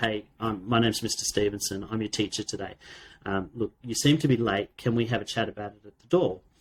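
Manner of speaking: ordinary talk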